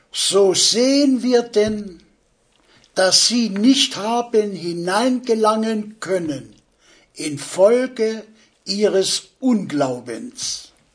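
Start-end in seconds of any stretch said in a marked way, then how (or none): 7.1-10.6 "unglaubens" said slowly with stress. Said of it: "Noch einmal die Betonung auf den Unglauben".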